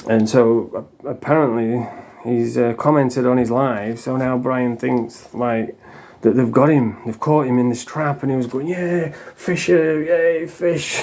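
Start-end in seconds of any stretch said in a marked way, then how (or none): 8.7-11.0 high, drawn-out, gloating celebratory whoop. Retelling how Brian reacted to a comment on his live: imitating Brian cheering. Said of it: "cheering and celebrating".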